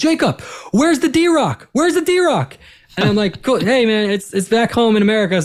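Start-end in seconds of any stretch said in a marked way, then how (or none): 0.0-2.6 very high, swooping, loud shout. Retelling how a guy in the crowd yelled at him during setup, retelling a fan's shout. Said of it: "he was just shouting".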